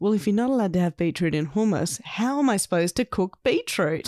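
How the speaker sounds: usual speaking voice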